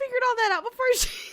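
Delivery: very high-pitched, cracking up laughing mid-sentence. Retelling own reaction to a scene, laughing hard while talking. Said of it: "I don't know why I'm laughing so hard".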